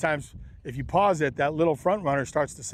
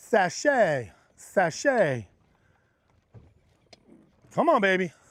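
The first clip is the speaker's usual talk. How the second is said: slow, swooping sing-song with every word stretched; 4 semitones higher than usual. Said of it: "Are you laughing at my [name]".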